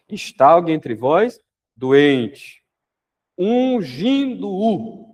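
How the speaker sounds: very slow, drawn-out, solemn scripture-reading tone.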